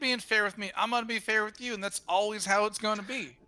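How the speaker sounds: put-on Southern accent on every word. Speaking in character to the other players about a fair deal: southern accent. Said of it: "when did you get Southern?".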